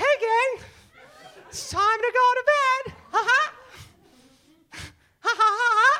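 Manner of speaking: very high, loud cartoon-character voice. Retelling putting the kids to bed in Mickey Mouse voice. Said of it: "I gotta bring out the Mickey".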